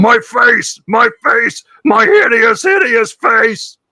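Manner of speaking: high-pitched orc voice crying out. Voicing an orc just hit in a tabletop fight, an orc crying out. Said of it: "an orc cries out".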